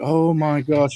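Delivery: fake concerned voice. Telling a story, the speaker imitates a woman reacting to his fall: imitating fake concern. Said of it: "acting all concerned".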